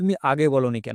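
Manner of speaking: ordinary delivery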